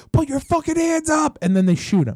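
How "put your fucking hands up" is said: mock shriek, very high-pitched screaming. Retelling how men screamed at a man before shooting him, retelling them screaming. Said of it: "They're screaming at him".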